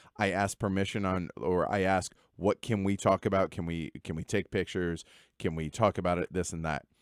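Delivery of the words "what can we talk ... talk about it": normal talking voice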